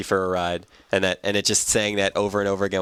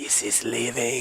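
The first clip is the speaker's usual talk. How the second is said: soft, hushed half-whisper under the breath; 3 semitones higher, 5 dB quieter than usual. Retelling a strange commercial where people speak: imitating a half-whisper.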